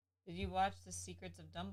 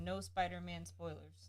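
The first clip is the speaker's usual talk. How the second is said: ordinary delivery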